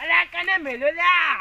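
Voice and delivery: loud, slow calling voice.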